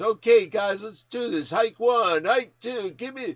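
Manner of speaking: high, loud barking call like a quarterback.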